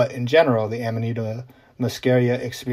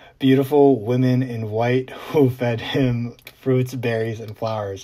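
talking with laughter breaking into the words. Quoting a traveler's written account of his trip, laughing while talking. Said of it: "I can't even say that without laughing".

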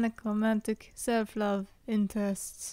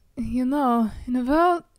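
put-on German accent, loud and slow; 3 semitones higher, 7 dB louder than usual. Reading a game character's line aloud, suddenly in a German accent. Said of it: "why am I suddenly going German?".

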